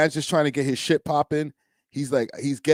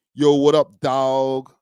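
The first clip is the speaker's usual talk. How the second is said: very slow, loud, drawn-out fake American accent; 5 dB louder than usual. Retelling how they used to talk: imitating his past fake american accent. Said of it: "We try to sound American to get by".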